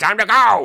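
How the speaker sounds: very high, very loud cartoon shout. Describing a game level where the world distorts: Wario voice. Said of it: "Wario goes, like, it's something like".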